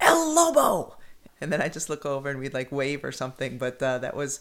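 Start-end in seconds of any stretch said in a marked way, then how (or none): 0.0-1.0 very high, very loud hollering. Retelling how Reg always greeted the speaker at the Reebok Club, retelling Reg's loud yell. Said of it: "he would yell in that distinctive voice and very loudly".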